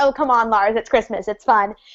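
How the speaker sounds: plain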